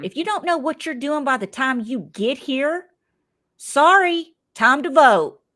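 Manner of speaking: parental scolding tone. Acting out a show host ordering contestants to sit: scolding like a parent. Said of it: "like I'm getting on to my children".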